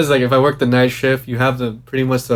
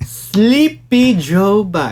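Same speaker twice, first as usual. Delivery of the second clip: puckered lips, pushed higher in pitch; 8 semitones higher than usual. Asked to do Trump, trying it with puckered lips: Trump impression, puckered lips. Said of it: "I feel like I got to pucker my lips up or anything. ... That's the best I can do".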